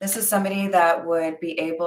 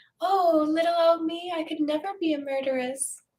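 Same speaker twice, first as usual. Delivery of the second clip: very high, sweet, innocent, helpless little damsel voice; 11 semitones higher, 3 dB quieter than usual. Imitating the princess from Nintendo, mock-innocent Nintendo princess voice. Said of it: "changes their voice to sound more innocent".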